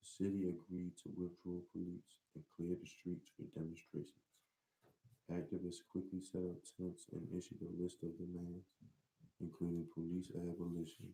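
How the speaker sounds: indistinct, run-together mumbling. Reading a news story aloud to the others, mumbling. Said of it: "'Cause now you're mumbling".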